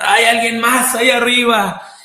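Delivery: frightened shouting.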